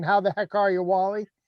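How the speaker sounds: ordinary delivery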